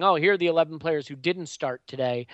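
usual speaking voice

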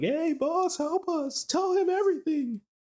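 very high, drawn-out wailing screams from the background. Retelling a scene where buried men cry out to their boss: imitating characters screaming. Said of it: "they're all in the background screaming like".

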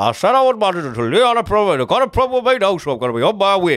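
put-on quick Ashington accent.

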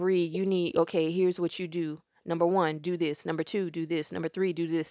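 ordinary delivery

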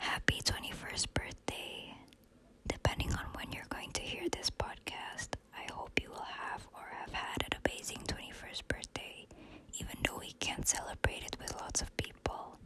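hushed, whispered voice. Recording a birthday ASMR message in their room so the listener won't hear, whispering. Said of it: "so I have to whisper so that you won't hear me".

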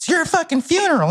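very high, flamboyant, effeminate camp cartoon voice. Retelling what a man said as he threw them the acid: imitating an effeminate man. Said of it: "He was a very effeminate kind of cartoon character".

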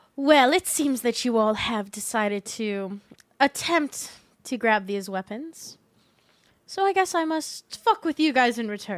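loud, catty British delivery. Voicing Medea as the players grab the weapons: Medea voice, bitchy Brit. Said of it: "Bitchy Brit".

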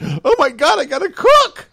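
very high, shrill, drawn-out scream of terror. Retelling how she reacted to having to cook: imitating a terrified scream. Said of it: "she screamed out, like, in terror".

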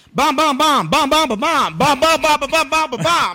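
mock shouting, pretend yelling. Acting out what they would do on the plane: pretend yelling. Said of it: "I'm yelling it on the plane".

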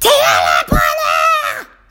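mock piercing yell, very high and shrill. Retelling how a student yelled the class mantra: imitating a student yelling. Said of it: "So he's just yelling".

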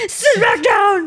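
acted scream. Recounting the driver screaming at them during a lion sighting, retelling a scream. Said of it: "the driver screamed at me".

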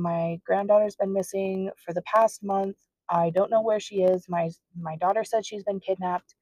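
ordinary talk

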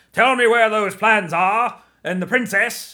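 put-on slow and loud in a Cockney accent. Retelling how Vader's actor delivered his lines: David Prowse Cockney impression. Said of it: "I think he had kind of a Cockney accent too".

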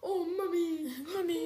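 put-on crying girl voice. Retelling a scene where a girl cries and runs back in: imitating a crying girl. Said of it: "And then she started crying and ran back in and was like".

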